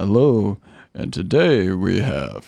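very slow, drawn-out jazz radio host voice. Imagining playing records live on air: put-on jazz radio host voice. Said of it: "Like that kind of voice".

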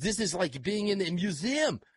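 put-on French accent.

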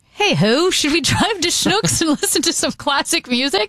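high-pitched, put-on mock British accent.

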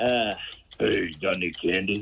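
put-on child voice, very low. Answering a quiz question, playing a trick-or-treating kid: deep-voiced kid. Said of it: "a kid with a deep voice".

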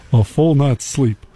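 put-on Texan cartoon voice. Telling a joke to another speaker: Hank Hill voice. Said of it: "Still Hank Hill".

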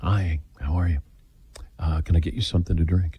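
put-on hushed voice. Retelling how salon staff greeted waiting customers: imitating staff speaking in hushed tones. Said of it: "People speak in hushed tones".

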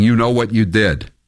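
ordinary talk

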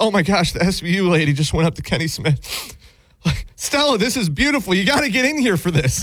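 weepy, overjoyed, tearful blubbering. Imagining Aaron in his basement reacting, imitating someone crying. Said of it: "crying in tears".

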